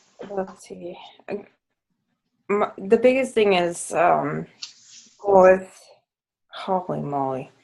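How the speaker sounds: all emotional, choked up, fighting back tears. Answering what their biggest struggle is, choked up and emotional. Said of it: "Now I'm like all emotional".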